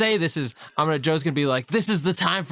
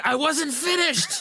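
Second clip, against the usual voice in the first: very high-pitched shrieking yell; 10 semitones higher than usual. Describing a character leaping back into the fight with knives: screaming. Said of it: "And just screaming, like".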